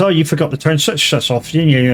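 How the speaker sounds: usual speaking voice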